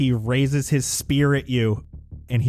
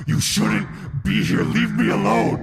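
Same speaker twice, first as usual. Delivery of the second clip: shouting, higher pitch; 9 semitones higher than usual. Voicing a captain swinging wildly at the players: yelling. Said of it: "as he's starting to yell".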